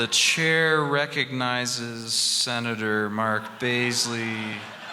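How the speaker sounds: slow drawn-out delivery.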